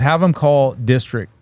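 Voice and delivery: ordinary talk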